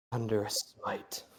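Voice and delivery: hushed, low mutter under the breath. Narrating a fight, the storyteller gives the killer's words, muttering. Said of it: "as he just mutters".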